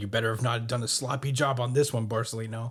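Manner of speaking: ordinary talk, nothing marked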